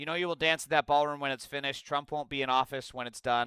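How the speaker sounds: ordinary talk, nothing marked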